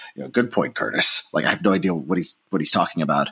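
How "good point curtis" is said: put-on low, pointed, insincere sarcasm. Speaker recalls answering Curtis in front of an audience: retelling own sarcastic reply. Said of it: "I just sarcastically go".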